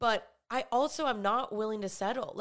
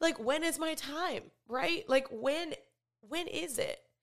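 heartfelt, emotional, higher-pitched delivery; 5 semitones higher than usual. Speaking about hopes of meeting a future partner, getting emotional. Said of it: "I'm getting emotional".

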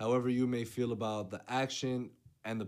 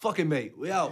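bad, awful put-on English accent; 4 semitones higher, 4 dB louder than usual. Joking about British actors coming over, in an awful English accent. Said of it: "my awful English accent".

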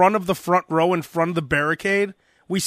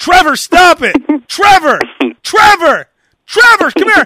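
shrill, swooping, loud, high, drawn-out yelling; 11 semitones higher, 9 dB louder than usual. Describing women chasing drunk guys down the street: imitating a woman yelling. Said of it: "they have to keep yelling".

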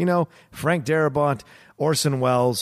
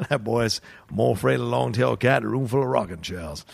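rough, creaky, rasping cartoon rooster voice; 3 semitones lower than usual. Joking with another speaker, he breaks into a Foghorn Leghorn voice. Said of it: "Foghorn Leghorn showed up".

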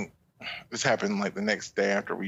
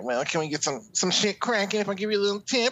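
very high-pitched, sleazy, skeezy voice; 11 semitones higher than usual. Acting out a client propositioning a massage therapist: skeezy voice.

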